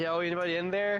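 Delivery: ordinary delivery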